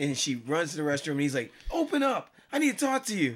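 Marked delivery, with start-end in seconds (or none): 1.7-3.4 very high, yelled, demanding shout. Retelling a skit where the husband follows his wife to the restroom: imitating a husband yelling. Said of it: "And they're yelling".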